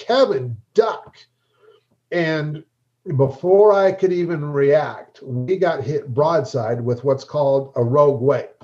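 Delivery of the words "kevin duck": mock booming shout, thundering and high-pitched. Recalling a boat trip, retelling a warning over the intercom as a thundering shout. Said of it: "I hear his thundering voice over the intercom".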